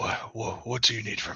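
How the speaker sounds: feeble, weak, barely-there whisper. Reading a weak character's line aloud in a weak, whispering voice. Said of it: "he's weak and kind of just very whispering words".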